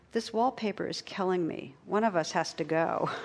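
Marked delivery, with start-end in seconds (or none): none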